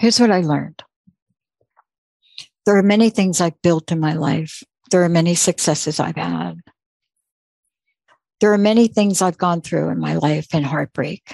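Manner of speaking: choked-up voice, getting emotional. Speaker thanks the listener for what they learned from them last time, choked up. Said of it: "I'm getting choked up here".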